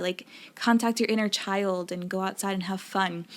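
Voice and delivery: ordinary talk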